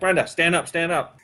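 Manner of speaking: normal talking voice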